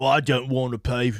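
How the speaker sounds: put-on sudden, accidental slip into British accent. Mimicking an American liberal's view, accidental British accent. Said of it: "I don't know why I went British".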